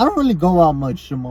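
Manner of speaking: voice breaking and cracking. Speaker telling Jamal that they rarely go out: voice cracking. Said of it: "My voice cracked a little bit".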